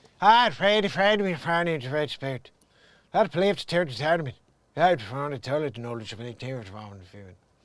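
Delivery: put-on Irish movie accent, put on. The speaker tries out Brad Pitt's Irish accent from Snatch. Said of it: "If I do Brad Pitt's Irish accent from the snitch".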